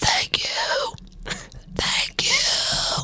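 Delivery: slow, breathy, airy whisper. Doing Rose floating on the boat: Rose impression. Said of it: "This is Rose floating on the boat".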